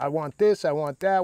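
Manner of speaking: ordinary delivery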